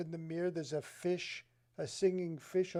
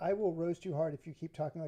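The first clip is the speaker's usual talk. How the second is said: plain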